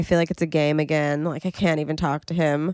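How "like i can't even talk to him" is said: ordinary talk, nothing marked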